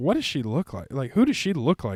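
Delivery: ordinary talk, nothing marked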